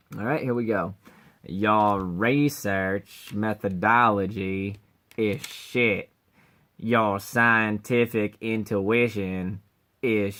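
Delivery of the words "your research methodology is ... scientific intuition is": very slow, lazy drawl, every word dragged out. Voicing the guy the speaker imagines sounding like Cleveland, doing a Cleveland from Family Guy voice. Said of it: "I'm going to try and sound like him".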